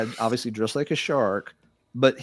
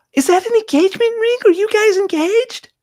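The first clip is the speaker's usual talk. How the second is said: put-on very high, squeaky lady's girly voice; 7 dB louder than usual. Imitating a lady who spoke to his wife, super high, squeaky, girly voice. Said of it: "I'll do the voice as best I can. ... She has this super high, squeaky, girly voice".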